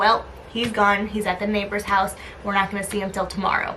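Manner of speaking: ordinary talk, nothing marked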